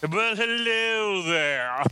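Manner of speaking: put-on classy British accent. Co-host answering his introduction on the show, trying to sound British. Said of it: "I was trying to sound British".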